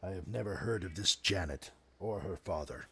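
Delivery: very hushed, low, very gravelly voice. Voicing a Wolverine who answers a knight, very gravelly voice. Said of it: "in a very gravelly voice".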